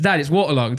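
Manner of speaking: plain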